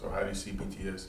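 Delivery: quick, rushed speech.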